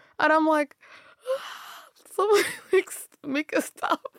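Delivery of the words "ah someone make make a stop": high crying voice, half laughing. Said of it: "I'm also laughing because I couldn't tell you why I'm crying".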